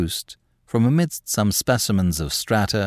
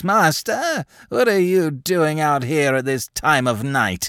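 cracking aged voice, pitched up; 6 semitones higher than usual. Narrating, voicing another man calling from his window, in a cracked old voice. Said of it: "saying in his cracked old voice".

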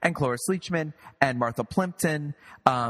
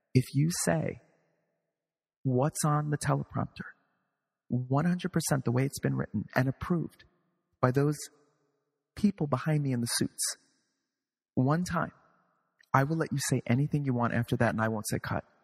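very quiet, barely audible, hushed, under the breath. Retelling what they said to Cloris Leachman with her mic covered, in the quietest voice. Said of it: "I say in the quietest voice".

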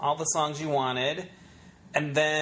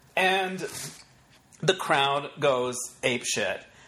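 ordinary talk, nothing marked

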